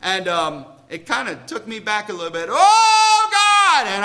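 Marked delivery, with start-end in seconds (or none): 2.5-3.9 loud high-pitched hollering. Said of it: "I mean hollering and going on and yelling".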